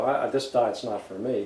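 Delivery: ordinary talk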